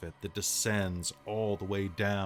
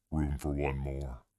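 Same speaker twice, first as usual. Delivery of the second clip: guttural, throaty creature voice; 5 semitones lower than usual. A creature looks down at you on the couch, in a guttural voice. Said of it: "in a guttural voice says".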